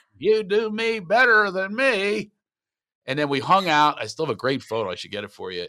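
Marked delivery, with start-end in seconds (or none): 0.2-2.3 put-on older man's voice, higher and louder. Retelling what Don Knotts said after the Barney line. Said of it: "he turns to me and goes".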